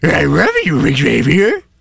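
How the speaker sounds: swooping, talking cartoon dog voice. Playing the cartoon dog in a joking love scene: Scooby-Doo voice. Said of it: "You got a good Scoob".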